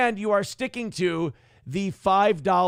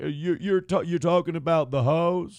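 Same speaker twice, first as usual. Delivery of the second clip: puzzled show host voice. Mocking a reply from the clip that needs a translator: Dr. Phil impression. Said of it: "He's like".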